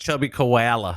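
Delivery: exaggerated fake Australian accent. Streamer asking a viewer about Chubby Koala, in a terrible put-on Australian accent. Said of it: "That's my best Australian".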